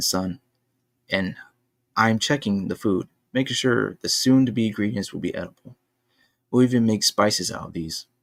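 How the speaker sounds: plain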